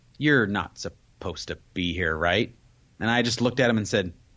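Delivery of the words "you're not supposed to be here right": very low, gentle, unruffled, calm and friendly voice. Retelling how someone came up and told the speaker to leave, quoting a very calm voice. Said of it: "in a very calm voice, very nice".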